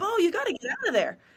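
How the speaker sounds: put-on shrill, very high screaming. Retelling screaming at the quarterback as the pocket collapsed: imitating own screaming. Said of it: "and I was screaming".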